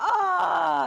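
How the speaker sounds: very high, pained, stabbed-sounding yelp. Acting out a woman's reaction whenever you said a word wrong during housework, imitating someone being stabbed. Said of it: "as if she was being stabbed".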